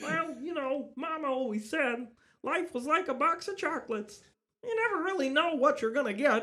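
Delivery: puppet style voice, pitched way up, loud. You got this character to perform, so deliver the line in a Kermit the Frog voice. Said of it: "So I got Kermit the Frog".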